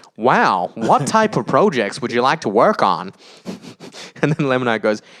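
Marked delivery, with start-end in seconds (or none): 0.2-3.1 put-on robot voice. Speaker retells a man answering a project request as the AI, in a robot voice. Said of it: "I should do a robot voice".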